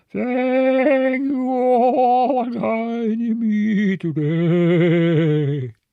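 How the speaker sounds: attempted spooky voice. Trying out a voice for a new Halloween character, speaker does a failed spooky voice. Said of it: "That's not really spooky".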